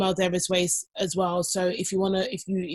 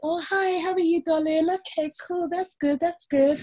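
high-pitched, put-on British accent; 10 semitones higher than usual. Retelling how Mum greeted a friend: imitating Mum doing a British accent. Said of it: "Mum was doing British, innit?".

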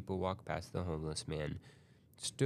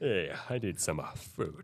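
goofy put-on cartoon voice. Joking about doing a voice the whole time, in Kronk voice. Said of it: "Just doing a Kronk voice the whole time".

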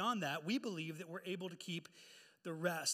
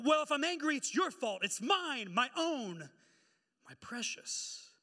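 acted heated, indignant, angry outburst, loud and high; 7 semitones higher, 6 dB louder than usual. Retelling the film scene where Bilbo refuses to give up the ring: imitating Bilbo getting angry. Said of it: "there's no need to get angry".

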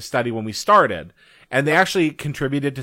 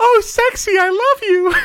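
very high, shrill put-on female voice, cheering; 6 dB louder than usual. Retelling cheering on a boy throughout a match, put-on high-pitched female voice. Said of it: "So the high-pitched voice, I'd be like".

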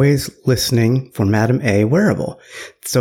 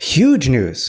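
sarcastic, with pitch falling at the end. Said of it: "I'm being sarcastic".

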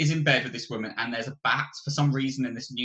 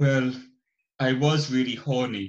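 put-on posh pseudo-British accent, louder; 4 dB louder than usual. Quoting a film character's line about a bat: Nicolas Cage weird posh pseudo-British accent. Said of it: "really weird, posh, pseudo-British accent".

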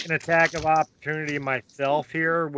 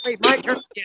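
put-on high little kid voice. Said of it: "He's like".

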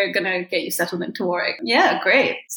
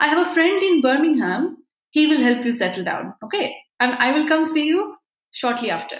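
put-on Bengali Indian accent, pitched up; 7 semitones higher than usual. Retelling their father's words to the listeners, imitating dad's bengali accent. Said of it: "I love this accent and this impersonation".

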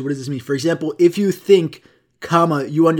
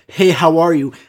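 aggressive, confrontational shouted delivery; 4 dB louder than usual. Retelling a bank teller's greeting: imitating an aggressive greeting. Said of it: "the most aggressive".

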